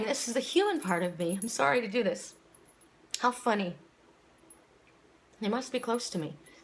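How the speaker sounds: tearful, crying speech. Talking about missing your animals, speak while crying. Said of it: "So why I'm crying".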